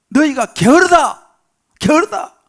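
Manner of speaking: slow, loud, angry king's rebuking voice.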